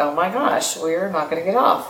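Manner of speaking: play-acted, alarmed, rising, panicking exclamation. Retelling a takeoff that would not leave the runway: retelling own panic. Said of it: "I was panicking".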